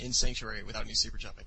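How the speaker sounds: ordinary delivery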